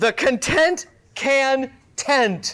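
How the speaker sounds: very slow, drawn-out, deliberate delivery. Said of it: "Gonna say it nice and slow".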